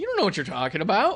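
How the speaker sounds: high-pitched, loud, mocking. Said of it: "And you're like".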